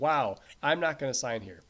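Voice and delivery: ordinary talk, nothing marked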